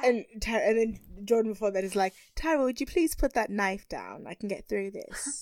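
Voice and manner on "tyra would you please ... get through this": put-on British accent, quieter. Retelling what a contestant said to another woman: put-on british accent. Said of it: "Just doing a British accent right now".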